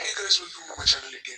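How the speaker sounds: very low, machine-deepened voice-changer voice. Video host testing a deep voice changer while greeting viewers. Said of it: "let's go with the deep voice changer deep".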